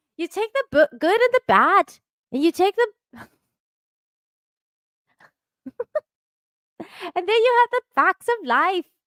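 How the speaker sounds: very high, terrible fake Irish accent. Attempting a line again after failing the first try, in a bad Irish accent. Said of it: "in an Irish accent".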